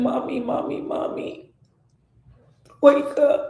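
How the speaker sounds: acted, frightened, anxious children pleading over and over. Recalling her young children finding her unconscious: imitating children screaming. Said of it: "And they were screaming".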